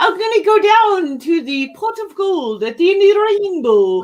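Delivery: very high-pitched, loud, put-on leprechaun voice. Asked by the other speaker to hear it, doing a leprechaun voice. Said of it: "Let me hear your leprechaun voice".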